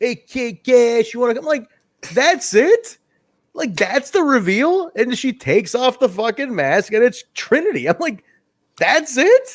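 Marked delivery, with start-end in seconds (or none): 0.0-1.5 put-on very strong New York accent. Retelling what a masked girl said on the mic, Trinity's very New York accent. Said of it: "with her very New York accent".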